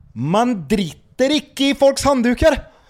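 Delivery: put-on Norwegian accent, very high-pitched. Asked how Norwegians would sound, speaker answers in a Norwegian accent. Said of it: "Du som är bra på norska".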